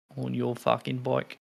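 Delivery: put-on Aussie accent. Joking about an Australian beer name, putting on an Australian accent. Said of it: "Let's stop being Australians now".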